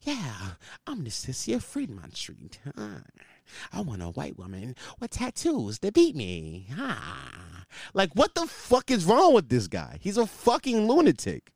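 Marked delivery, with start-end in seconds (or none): 0.0-7.6 mocking, bad horror villain voice, quieter. Imitating a man from a podcast clip: imitating a bad Halloween movie villain. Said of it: "he sounds like a bad villain from a Halloween movie".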